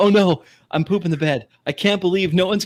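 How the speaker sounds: panicked, startled, blurted words. Retelling not finding the button while everyone watched, imitating own panic. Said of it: "That is me absolutely panicking".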